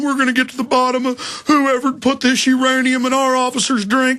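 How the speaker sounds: mock deadly serious, grave, solemn official tone. Imitating cops at a press conference with serious looks: imitating a serious tone. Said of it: "with real serious looks on their face going".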